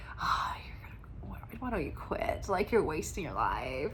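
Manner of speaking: sly, tempting whisper, very quiet. Describing a doubting inner voice like a movie devil, in a sneaky devil whisper. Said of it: "they just whisper these suggestive thoughts".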